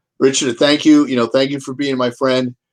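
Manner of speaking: ordinary delivery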